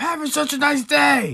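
screamed at top of lungs, very high, shrill, loud. Retelling what gets screamed out at home: imitating own screaming. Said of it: "scream out".

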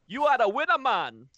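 hyped-up, loud, high commercial announcer pitch. Answering a request to do an Apple Jacks promo: Apple Jacks commercial voice. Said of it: "What would an Apple Jacks promo sound like?".

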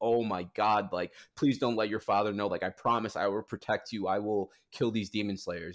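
imitated terrified voice. Retelling a scene and acting out a frightened character: imitating a terrified plea. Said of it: "and she's terrified, and she's like".

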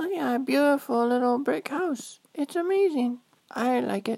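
put-on high little-kid voice. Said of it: "me changing my voice and then talking for you".

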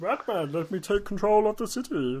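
high, slow cartoon alien voice. Joking about Batman, a put-on Marvin the Martian voice. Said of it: "that sounds more like Marvin the Martian than Batman".

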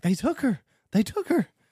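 mock frantic, high, panicked cry. Retelling a neighbor lady calling in an alligator attack, imitating a panicked neighbor. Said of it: "neighbor calling in alligator attack, performed".

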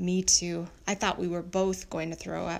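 plain

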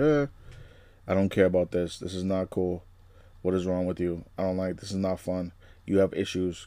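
soft, flat, dead-level deadpan monotone. Speaker demonstrating how an actress plays a character, Wednesday-style flat monotone. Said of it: "Kind of like monotone kind of talking".

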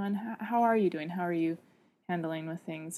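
serious tone. Showing how to ask that person again midway through a conversation: more serious tone. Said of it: "saying that again in a more serious tone".

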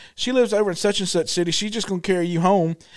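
ordinary talk, nothing marked

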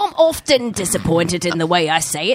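fake English accent, put-on British. Joking about saying the word often: put-on british accent. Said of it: "I didn't know you were from England".

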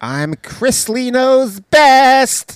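very high, very loud, shrill, flamboyant camp voice. Introducing oneself on a news bit, in a Chrisley Knows Best voice.

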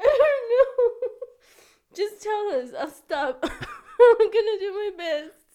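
talking through laughter. Asking the other speaker to go on, laughing while talking. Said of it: "You're still laughing".

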